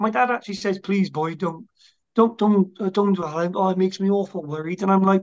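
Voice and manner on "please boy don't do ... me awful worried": mock pleading tone, slower. Quoting what their dad actually says to them: imitating dad pleading. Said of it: "My dad pleads with me".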